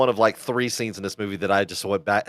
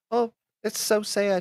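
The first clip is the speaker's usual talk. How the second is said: very high, sweet, very slow grandma voice; 12 semitones higher than usual. Retelling a scene, the speaker imitates Gladys's happy grandma voice. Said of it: "Happy grandma".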